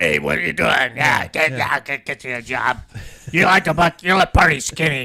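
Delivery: booming, very loud, gravelly farmer holler. Retelling the farmer offering him a job, speaker imitates Wayne's gravelly voice. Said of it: "Gravelly voice".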